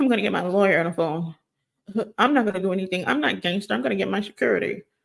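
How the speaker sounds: fast, trembling, frightened voice. Retelling how Aiden reacted when a manager confronted him, imitating Aiden's trembling voice. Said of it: "If you could hear the trembling in his voice".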